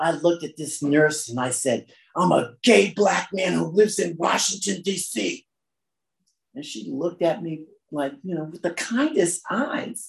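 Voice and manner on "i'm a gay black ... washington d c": put-on belligerent, defiant voice, high and rough. The speaker recounts answering a nurse with all he had left, retelling a defiant, belligerent reply. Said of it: "with my most defiant, belligerent voice I could muster".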